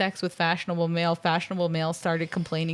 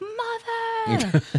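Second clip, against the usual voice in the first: play-acted, shrill, very high scream. Retelling being dragged into an escalator: imitating own past scream. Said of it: "I'm being dragged into the escalator screaming".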